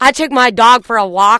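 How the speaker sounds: very loud, high voice with upper lip held still. Imitating a woman met at a dog park, talking with no upper lip. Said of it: "she was talking like this and she had no upper lip".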